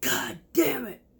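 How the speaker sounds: very high, sudden screamed outburst. Retelling how he screamed while scrubbing a pan: imitating a scream. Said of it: "he screams".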